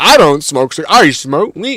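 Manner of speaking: mock self-righteous tone. Mocking people who are righteous about smoking weed: imitating a self-righteous person. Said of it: "righteous about it".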